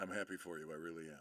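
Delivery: very low, very soft, dead-level monotone drone. Speaker on a stream acts out a line: monotone. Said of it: "suppose it's like in monotone".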